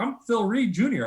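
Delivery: put-on pleasant British accent. Retelling a stranger's reply when asked who he was, imitating his nice british accent. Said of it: "he's got just this nice English accent".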